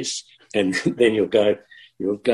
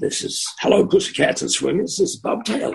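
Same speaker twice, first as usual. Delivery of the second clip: put-on American radio DJ accent and patter; 9 semitones higher than usual. Recalling a fellow radio guy, imitating Bob Taylor's American accent. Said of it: "With the whole American sort of accent".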